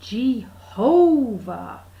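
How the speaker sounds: drawn-out Jehovah, middle syllable ho stressed. Explaining how the name Jehovah is said: slow, stress on middle ho. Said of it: "you kind of say it real slow and you emphasise the middle bit".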